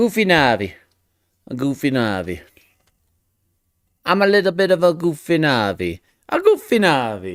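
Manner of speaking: put-on Italian accent. Speaker riffing on the words goofy Navi, in a put-on Italian accent. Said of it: "I don't know why I went to Italian there".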